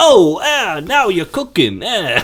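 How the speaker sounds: very high-pitched, slow, drawn-out voice. Doing an impression of Christopher Walken getting abducted: Christopher Walken impression. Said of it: "Christopher Walken being like".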